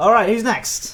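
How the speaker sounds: loud, slow, high call. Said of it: "Sorry if I'm being loud".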